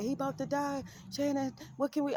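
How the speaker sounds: put-on frantic, panicked crying. Speaker tells a story about a hospital scare and acts out a woman's panic, imitating frantic crying. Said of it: "He crying like".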